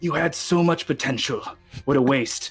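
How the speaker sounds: whispered, menacing character voice. Playing a character leaning down to a fallen rival: whispering in character. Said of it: "whisper in their ear".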